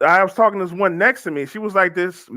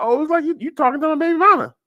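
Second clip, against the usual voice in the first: high, fast, sassy voice. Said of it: "the sassy friend is like".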